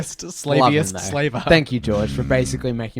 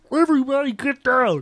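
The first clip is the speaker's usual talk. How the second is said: bad put-on old man voice, higher pitch; 12 semitones higher than usual. Acting out a scene with a bad George Lucas impression. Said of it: "a really bad impression of George Lucas".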